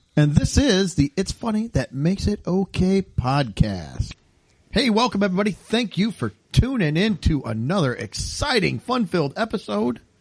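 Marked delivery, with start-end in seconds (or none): 4.7-5.5 blurted out in a rush, rattled off. Podcast host welcoming everybody at the top of an episode, said really fast. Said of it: "You said everybody really fast".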